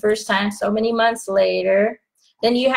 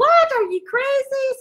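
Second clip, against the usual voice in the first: fake high-pitched shriek. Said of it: "I expected a lot of screaming".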